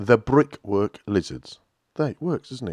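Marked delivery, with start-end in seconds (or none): 0.0-1.6 slow, deliberate, carefully spaced-out pronunciation. Couldn't pronounce a band's name last time, so saying it slowly. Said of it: "I'll do it slowly".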